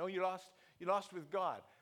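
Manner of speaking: usual speaking voice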